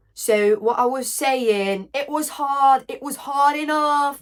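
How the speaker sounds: very slow, drawn-out, put-on British accent. Speaker offers a demonstration of doing British: British accent. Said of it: "Je sais aussi faire le british".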